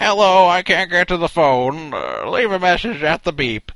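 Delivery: put-on tired old man voice. Describing someone's answering machine greeting, imitating a tired old man. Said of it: "It kind of sounded like an old guy leaving a message".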